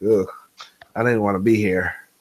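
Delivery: put-on bored complaining. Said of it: "and he was like".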